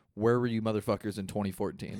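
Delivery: ordinary talk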